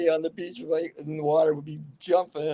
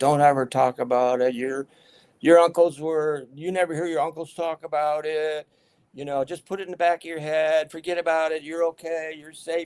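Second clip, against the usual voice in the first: normal talking voice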